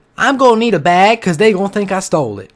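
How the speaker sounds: very loud woman's voice. Retelling what a homeless woman said, imitating her voice. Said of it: "I'll do it in her voice".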